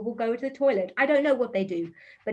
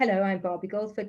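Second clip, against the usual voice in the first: boring, lifeless, flat monotone drone; 3 semitones lower than usual. Showing how a boring presentation introduction sounds, in a dull, flat monotone. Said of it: "If I did this: ... See the difference? It's boring".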